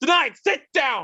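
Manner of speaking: imitated dramatic shouting. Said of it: "the only time you ever hear him raise his voice".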